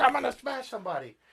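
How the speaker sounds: high, fast, fired-up bragging tone.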